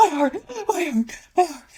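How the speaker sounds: frantic, very high-pitched panicked cry. Retelling a woman's panic attack, imitating someone panicking. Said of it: "She's panicking".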